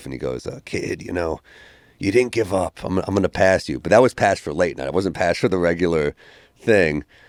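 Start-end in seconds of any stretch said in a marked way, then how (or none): 0.5-3.8 rasping, scratchy, raspy put-on voice. Retelling what the club owner said after the set: imitating a raspy voice. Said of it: "he had, like, a raspy voice".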